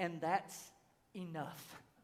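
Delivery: barely audible, very quiet whisper under breath. Quoting scripture, then adding a private aside: whispering under breath. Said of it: "whisper under my breath and say".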